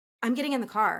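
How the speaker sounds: normal talking voice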